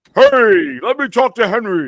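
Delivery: very loud, very high, drawn-out put-on voice. Speaker retells phoning a mom to talk to little Henry; Santa Claus voice. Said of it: "I do like the whole Santa Claus voice".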